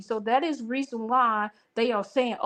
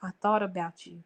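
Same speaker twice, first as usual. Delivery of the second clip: voice brought right down, low and soft; 4 semitones lower, 5 dB quieter than usual. Showing how a woman tells her man she thought about him: lowering the voice. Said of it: "You see how I lower my voice?".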